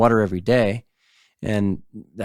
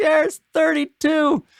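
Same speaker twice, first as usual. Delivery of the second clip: very high, top-of-the-lungs holler. Retelling a fishing trip, the speaker calls out the fish count, retelling a full-lung yell. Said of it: "I'm like yelling at the top of my lungs".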